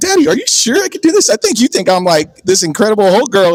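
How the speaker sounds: acted, high-pitched talking through laughter. Retelling what she said while laughing: imitating someone laughing. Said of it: "she's, like, laughing".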